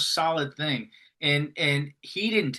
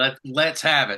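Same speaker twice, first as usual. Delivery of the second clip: put-on country voice, louder; 4 dB louder than usual. Imitating a friend's way of saying yes: imitating a friend's old country way. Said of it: "in his, like, old country, country way".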